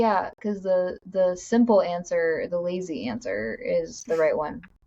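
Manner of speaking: ordinary talk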